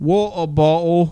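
loud put-on English accent, two words. Showing how anyone does an english accent in two words, mock english accent. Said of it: "do an English accent in two words".

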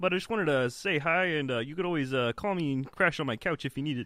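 cartoon puppet frog character voice. Greeting Elmo after being introduced as a friend: Kermit the Frog voice. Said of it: "Kermit the Frog".

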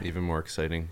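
very low, very hushed, flat monotone drone. Telling the others about being picked up after the Austin FC match; monotone. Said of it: "Don't just say exciting in a very monotone way".

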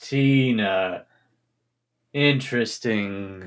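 sly, scheming villain drawl, one word stretched out. Repeating a name just mentioned, sounding like you have an evil plan. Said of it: "You make it sound like you have an evil plan".

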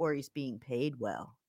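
hushed, very low, barely audible confiding aside. Quoting a critic who leans forward to add an accusation, imitating very quiet speech. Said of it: "leans forward and very quietly says".

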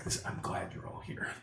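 breathy, barely voiced, very quiet whisper. Voicing a character greeting the arriving party: whispering. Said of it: "he kinda whispers that to you".

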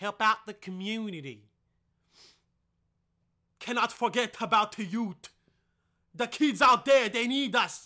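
very loud, put-on Jamaican accent. Plugging Taylor's Baked Goods to listeners, in an attempted Jamaican accent. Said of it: "That was supposed to be a Jamaican accent".

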